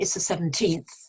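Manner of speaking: put-on teenth stressed with falling pitch. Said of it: "the stress would be on the teenth".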